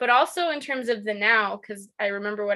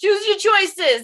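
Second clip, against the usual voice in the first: obnoxious New Jersey holler, very high, loud; 10 semitones higher, 6 dB louder than usual. Asked to say a catchphrase again, saying it with obnoxious New Jersey yelling. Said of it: "sound like you're like from New Jersey and you're yelling".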